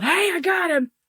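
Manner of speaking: put-on shrill yell, pitched very high. Retelling how the neighbor called out to the cops: imitating someone yelling. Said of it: "literally yells out".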